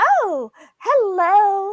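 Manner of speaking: very high, loud chirping voice. Retelling interviewing a guest while in character: Carly voice. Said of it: "She spoke like this the whole time".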